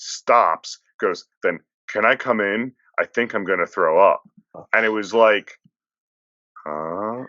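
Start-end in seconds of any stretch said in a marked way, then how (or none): none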